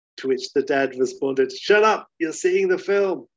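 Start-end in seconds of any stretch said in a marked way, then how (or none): 1.5-3.1 put-on high-pitched Glaswegian accent. Retelling what a dad in a Glasgow cinema queue told his crying child, Glaswegian accent. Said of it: "In you know Glaswegian accents".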